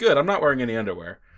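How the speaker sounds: put-on blasé, nonchalant tone. Retelling what a friend said on Parents' Day: imitating a blasé tone. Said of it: "that very blasé".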